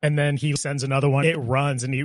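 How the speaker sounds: normal talking voice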